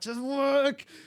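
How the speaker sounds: very high-pitched, pained, strained scream. Recounting cramps on a race downhill, retelling a scream at his calves. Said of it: "I'm just screaming at them".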